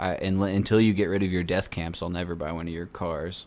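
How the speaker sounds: ordinary talk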